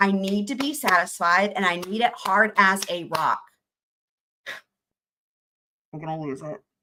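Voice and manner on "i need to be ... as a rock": ordinary talk, nothing marked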